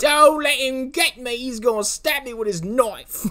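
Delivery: put-on poor British accent. Retelling an actress's scream for help, imitating a bad British accent. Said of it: "she has a worse accent than anyone you've ever attempted".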